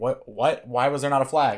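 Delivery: ordinary delivery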